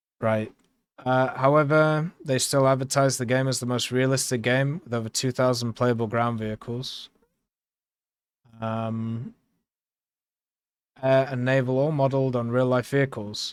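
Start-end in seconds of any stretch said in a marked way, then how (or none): none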